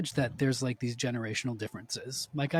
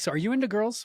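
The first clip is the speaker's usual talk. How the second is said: mock point-blank, cut-and-dried, pitched-up blunt tone; 10 semitones higher than usual. Retelling the father's point-blank question in the kitchen: imitating dad's blunt tone. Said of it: "I hope you can hear in the tone of vo-".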